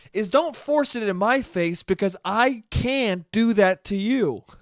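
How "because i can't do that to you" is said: ordinary talk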